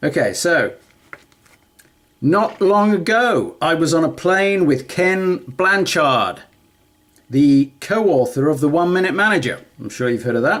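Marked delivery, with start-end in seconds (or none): 2.2-9.6 loud, ridiculously expressive, animated narration. Reading a book paragraph aloud as practice: loud, super expressive reading. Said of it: "I'm gonna try and be loud".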